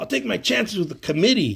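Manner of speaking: high, shouted irritated outburst.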